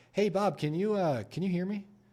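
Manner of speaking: very high, curious, inquisitive rising tone. Opening up a call with a seller, speaking in a curious tone. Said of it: "I'm going to use a curious tonality opening up the call".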